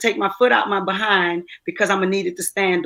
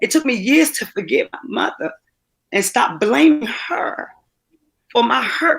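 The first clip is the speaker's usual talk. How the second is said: halting voice cracking and breaking near tears; 4 semitones higher than usual. Sharing a personal story about her mother, on the verge of crying. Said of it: "I don't know why I'm going to cry".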